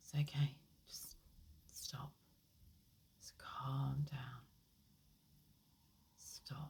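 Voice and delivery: put-on very soft, gentle, hushed, soothing baby-calm voice. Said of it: "imagine that calming hand on a baby's back".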